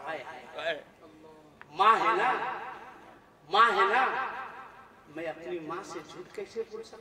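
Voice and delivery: low, soft, tearful murmur.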